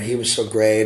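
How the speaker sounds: ordinary talk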